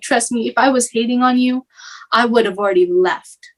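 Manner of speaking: acted-out sobbing speech. Retelling what you told her back then while sobbing, retelling own sobbing. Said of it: "I was just sobbing to her".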